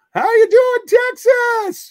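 very high, booming, slow, drawn-out belted stage call. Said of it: "the big high-pitched voice".

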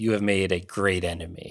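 put-on demon voice. A game narrator voices a demon speaking in a player's head, in a demonic voice. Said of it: "you hear a demonic voice enter it and goes".

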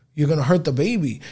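ordinary delivery

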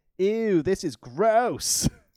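bad put-on American accent. Retelling what Harriet said while joining in, in a very bad American accent. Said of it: "in a very bad accent".

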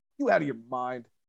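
low, hushed, menacing scary-man voice. Retelling how Billy threatened Jungle Boy: imitating Billy's low, threatening voice. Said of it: "this low, kind of low volume".

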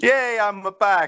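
high-pitched put-on Italian accent. A returning co-host answers the host's welcome with a Luigi impression. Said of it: "[name]'s very best Luigi impersonation".

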